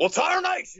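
high cartoon cowboy voice. Suggesting an accent someone else should try, the speaker bursts into a Yosemite Sam voice. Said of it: "He should do Yosemite Sam".

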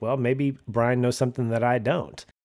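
plain

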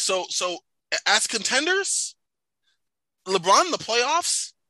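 voice going high. Debating whether the Lakers are contenders, voice going high. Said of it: "how high your voice got there?".

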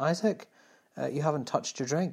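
mock keen, dutifully helpful, very obliging tone. Retelling what Daniel said to Isaac at dinner, imitating Daniel's helpful voice. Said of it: "daniel said in a very helpful voice".

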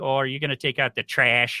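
put-on Wisconsin accent. Retelling how a girlfriend talks after visiting family: imitating Katie's Wisconsin accent. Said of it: "The accent comes out".

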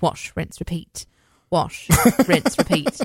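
put-on British accent. Showing how practice reading shampoo bottles sounded: British accent. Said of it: "It's scary good".

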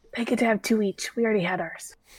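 speaking in a whisper. A player's character speaks over to Dimitri, whispering. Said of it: "I'm going to whisper over to Dimitri".

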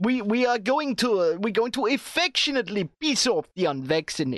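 put-on Russian-sounding accent. Imitating Emmanuel Macron's promise to the unvaccinated: Macron impression sounding Russian. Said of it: "I'm sounding Russian now".

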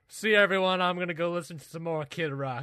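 loud, high southern drawl on every word. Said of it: "with my southern drawl".

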